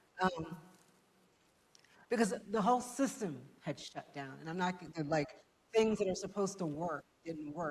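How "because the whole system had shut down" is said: tearful voice, near tears, holding back crying. Telling of a mother's death during COVID, on the verge of tears. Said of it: "I'm gonna cry".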